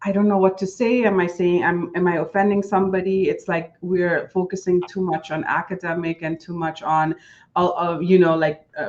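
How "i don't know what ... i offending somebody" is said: usual speaking voice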